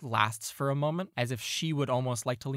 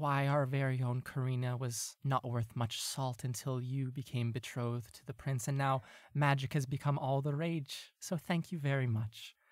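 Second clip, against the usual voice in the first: secretive, hushed half-whisper; 4 dB quieter than usual. Role-play narrator voicing a woman leaning in close to someone: hushed half-whisper. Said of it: "hushed so that only you can hear her".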